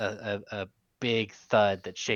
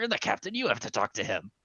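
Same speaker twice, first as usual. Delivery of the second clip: loud, forceful stage whisper with shouting force. Soldiers urging their captain to come out from cover and talk: whisper-shouting. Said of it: "like whisper shouting to him".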